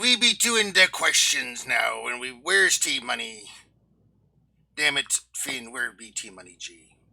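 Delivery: put-on pirate voice. It's wednesday, so the speaker has to talk like a pirate; pirate talk. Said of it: "you guys gotta talk like a pirate".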